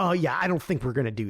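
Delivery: put-on fuming, furious anger. Retelling how a man reacted after a border crossing, imitating fuming anger. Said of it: "Scott's fuming".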